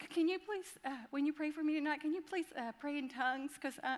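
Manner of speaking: high-pitched, very sweet, pleading voice. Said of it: "real sweetly".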